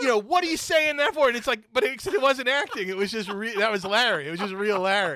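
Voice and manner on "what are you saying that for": acted, furious half-scream, loud and high. Retelling how one man, furious, screamed at another on set, retelling a half-scream. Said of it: "kind of screaming at him".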